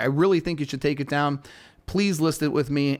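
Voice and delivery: plain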